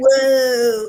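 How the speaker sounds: loud, slow, exaggerated California surfer accent. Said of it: "crank it up times ten".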